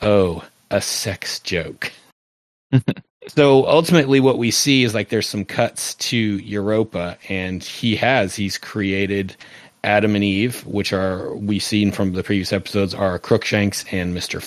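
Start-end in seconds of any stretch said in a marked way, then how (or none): 0.0-1.9 super dry, very slow, flat deadpan. Recapping a show scene, the speaker gives Dr. Manhattan's reply in a super dry voice. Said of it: "like super dry voice".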